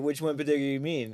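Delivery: mock dry, knowing, sarcastic tone. Retelling how he asked which meme was meant: imitating a sarcastic question. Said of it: "a very sarcastic way".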